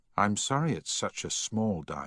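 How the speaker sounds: ordinary delivery, nothing marked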